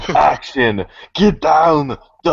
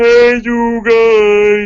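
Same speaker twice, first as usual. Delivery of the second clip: loud, very high holler, guys drawn out; 12 semitones higher, 6 dB louder than usual. Doing a voice on request, Sloth from The Goonies: Sloth voice. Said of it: "from Goonies, Sloth?".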